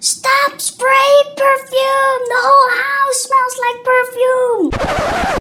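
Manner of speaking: very high, shrill screaming. Retelling a complaint from downstairs about perfume: imitating Miss Fresh screaming. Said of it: "screamed at me".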